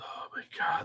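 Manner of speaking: breathy whispered aside.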